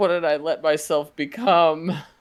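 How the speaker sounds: high, sobbing goblin voice. Voicing a goblin heard crying to itself, sobbing goblin voice. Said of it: "You can hear like this goblin sobbing to himself".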